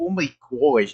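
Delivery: strange, weird New Jersey twang. Describing a game character's voice, imitating Rouge's weird accent. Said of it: "talks in a weird fucking accent".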